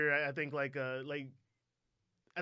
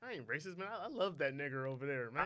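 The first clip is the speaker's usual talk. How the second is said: plain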